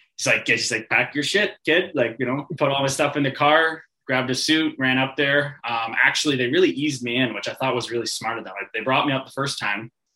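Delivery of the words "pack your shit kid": put-on pitched-up Boston accent, barking coach-like tone. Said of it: "his Boston accent".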